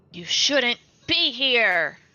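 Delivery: very stern tone. A player's character steps through the door and addresses the goblins: stern voice. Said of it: "in the most stern voice she can muster".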